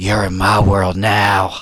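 slow-creeping, haunting, eerie voice. Retelling a dark fight scene, imitating Momoa's haunting voice. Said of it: "with his, like, haunting voice".

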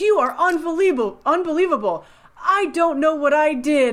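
put-on yelling, high-pitched. Recapping a show scene where a man yells at a woman, retelling a yell. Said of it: "he's yelling at her and he says".

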